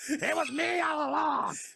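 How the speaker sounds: high, loud, slow belted-out shout. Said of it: "One more, one more, Vince McMahon".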